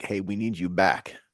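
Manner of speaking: usual speaking voice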